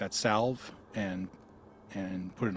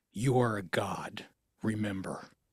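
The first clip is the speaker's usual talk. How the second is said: hushed, whispered voice. Leaning in close to an injured companion in a game scene: whispering. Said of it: "I lean in and whisper to him".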